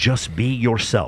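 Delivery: put-on line delivered in a Welsh accent. Retelling what a man says in a clip, do a Chris Williamson impression with a Welsh accent. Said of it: "He says it with his Welsh accent".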